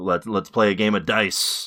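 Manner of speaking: ordinary talk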